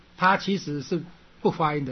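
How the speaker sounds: plain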